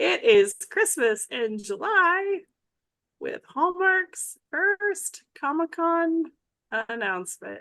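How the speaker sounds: very slow stretched news read. While another host loads the next item, the host announces the first story very slowly. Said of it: "I am going to talk very slowly".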